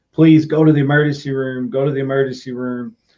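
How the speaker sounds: usual speaking voice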